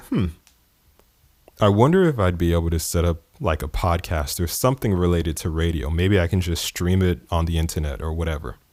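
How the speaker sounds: ordinary delivery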